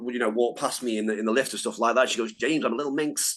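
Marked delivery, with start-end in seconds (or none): 2.3-3.4 really bad put-on Manchester accent. Retelling Trish Stratus's running joke when passing James in the lift, Trish Stratus in bad Manchester accent. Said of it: "putting on a worst Manchester accent".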